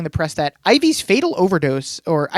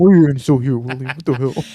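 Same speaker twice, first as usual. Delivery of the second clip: put-on mumble under the breath, lower; 4 semitones lower than usual. Retelling a scene where Rufus asks William why he's still here: Rufus mumbling under his breath. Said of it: "mumbles it under his breath like a loser".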